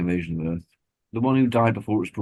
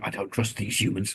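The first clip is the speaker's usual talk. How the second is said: put-on suspicious whisper, quieter; 5 dB quieter than usual. Imitating the nasty Administrator who keeps whispering: whispering like the Administrator. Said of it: "who's just constantly going around whispering".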